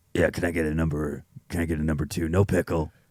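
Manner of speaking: very deep, hushed, barely audible voice. Imagining the hero in his car at a drive-thru, ordering: imitating Batman. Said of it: "and he's just like".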